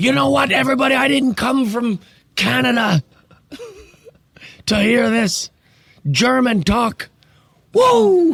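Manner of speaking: put-on pitch way up, slow, half Irish accent. Retelling a wrestling moment in a bad Owen Hart impression. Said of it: "Why did he sound Irish that time?".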